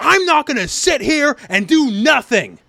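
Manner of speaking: very slow, deliberate yell. Retelling how Leorio yells from traffic: imitating Leorio yelling. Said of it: "And he's yelling at them".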